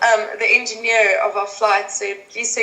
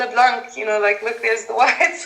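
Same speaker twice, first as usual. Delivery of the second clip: plain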